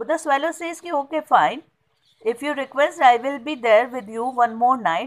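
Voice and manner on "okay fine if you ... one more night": normal talking voice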